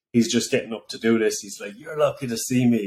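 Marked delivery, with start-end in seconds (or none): 1.7-2.8 weary, tired, beaten-down, broken voice. Quoting a comedian's stage act: imitating a tired, broken sixty-year-old comic. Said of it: "he does this, like, tired, broken sixty-year-old that never made it act".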